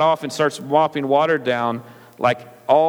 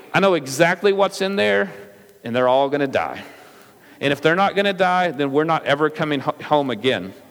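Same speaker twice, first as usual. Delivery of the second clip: ordinary talk, nothing marked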